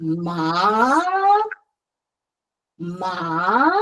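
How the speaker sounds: ma with rising second tone, low to high. Speaker demonstrates the second tone on the syllable ma: rising second tone. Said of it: "from the lowest of your voice range to the highest".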